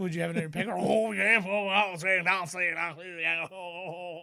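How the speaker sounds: put-on Cajun accent. Retelling what a guy said about a snapping turtle, imitating a cajun accent. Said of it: "That's a great impression".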